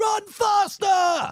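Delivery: shrill, very loud, high shout. Retelling a gate agent shouting at a late passenger: imitating someone shouting. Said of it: "he's shouting at me".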